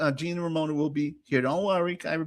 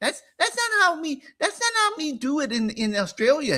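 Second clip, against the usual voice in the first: fussy voice, pitched up; 10 semitones higher than usual. Retelling a guest's lunch complaints, doing an Anus Young impression. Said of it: "he says".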